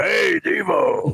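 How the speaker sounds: rough, creaky radio-announcer voice. Retelling how Greg Fadick greeted people: Greg Fadick's announcer voice. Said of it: "he goes".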